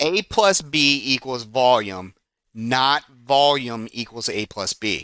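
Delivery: slow, deliberate, carefully spaced words.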